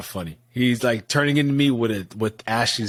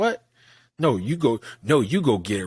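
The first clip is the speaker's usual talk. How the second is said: mock sassy, cheeky two-year-old voice. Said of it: "Rolled her little neck".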